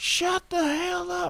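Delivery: very high, stretched-out, drawn-out yell. Retelling a movie scene where a neighbor yells: imitating a neighbor yelling. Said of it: "one of their neighbors yells".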